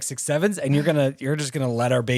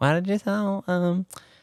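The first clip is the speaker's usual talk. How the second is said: mock young girl voice, higher pitch; 6 semitones higher than usual. Retelling a friend's text to them: imitating a friend in a Girl Scout voice. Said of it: "so I sound like a Girl Scout".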